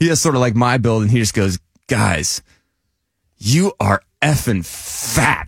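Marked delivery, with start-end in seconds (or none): 1.9-5.5 put-on blunt, drunk-sounding voice. Retelling what a drunk friend said to the group: imitating a blunt drunk friend. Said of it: "as blunt as hu-, humanly possible".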